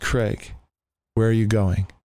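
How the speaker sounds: ordinary talk, nothing marked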